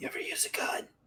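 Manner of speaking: very quiet, barely voiced, leaned-in whisper. Leaning in toward a character and asking a quiet question: whispering. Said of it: "I kinda lean in and whisper".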